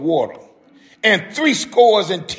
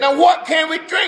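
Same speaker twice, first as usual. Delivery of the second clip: mock, slightly raised, grumbling, pitched-up voice; 8 semitones higher than usual. Speaker retells people in the wilderness without water asking Moses, retelling a slightly raised voice. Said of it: "they kind of raised the voice a little bit".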